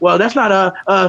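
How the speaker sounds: fake deceitful voice. Retelling how Marvin sounded when caught in an argument: imitating Marvin's lying voice. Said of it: "how Marvin tried to lie with his voice".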